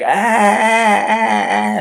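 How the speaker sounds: high, loud, pained screaming.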